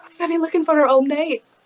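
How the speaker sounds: frazzled, worried fretting. Leaning on a companion's arm in character, acting all stressed. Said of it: "kinda lean on it as if I'm all stressed".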